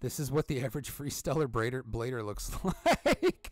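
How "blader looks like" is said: slow words broken up by laughter. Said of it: "I'm laughing at my own joke".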